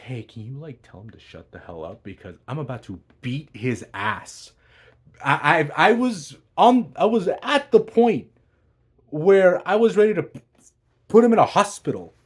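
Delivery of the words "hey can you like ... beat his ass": put-on muttering under breath, quieter. Retelling words said to a cousin about him: imitating muttering under breath. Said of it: "under my breath".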